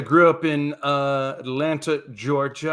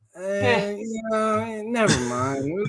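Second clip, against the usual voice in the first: very slow, high, spaced-out stoner ghost drawl; 7 semitones higher than usual. Imitating a ghost that died super stoned: imitating a stoned ghost. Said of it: "when he was super stoned".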